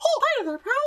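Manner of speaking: squeaky, very high-pitched put-on voice. Demonstrating the high-pitched voices the speaker can do: put-on high-pitched voice. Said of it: "I can do some, like, high-pitched voices".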